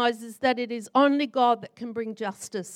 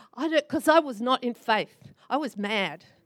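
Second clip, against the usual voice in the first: ordinary talk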